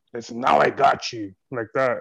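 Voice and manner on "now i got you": angry, loud, slow demonic voice. Speaker recounting a voice yelling in their ear one night as a child, imitating a demonic voice. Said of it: "it was like a demonic voice".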